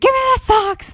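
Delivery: play-acted, very high, shrill shriek. Retelling an argument over socks before pushing, the speaker is retelling a scream. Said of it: "finally I just screamed".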